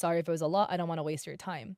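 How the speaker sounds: ordinary talk, nothing marked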